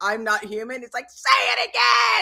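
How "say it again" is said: raging, rough, gritty, furious barked yell. Speaker retells a man yelling at an AI: mock-furious yelling. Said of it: "And he's like yelling at it".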